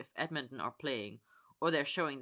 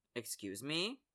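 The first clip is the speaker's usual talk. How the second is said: cool, detached, distant tone; 4 dB quieter than usual. On speakerphone, a man answers an accusatory caller, cool. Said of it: "he says coolly".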